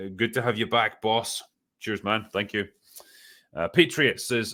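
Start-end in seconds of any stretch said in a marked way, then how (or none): none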